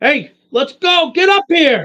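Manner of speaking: shrill, very loud, high-pitched, full-volume yelling. Calling an ally in character to come up and join: yelling. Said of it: "I yell at Holden".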